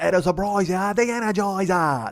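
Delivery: put-on Australian accent, high and slow. Quoting an Energizer line to show where the accent came from: Australian accent. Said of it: "That's the Australian fucking Jocko dude".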